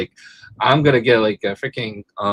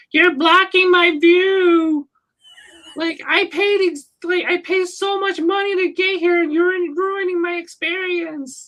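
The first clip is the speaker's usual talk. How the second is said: very high-pitched entitled tone, "view" stretched out. Retelling what the Karen ladies at the show said: imitating an entitled Karen complaining. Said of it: "the Karen ladies I met".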